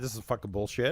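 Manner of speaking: put-on whisper. Retelling what Curtis said in the courtroom: imitating Curtis whispering. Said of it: "and Curtis whispered".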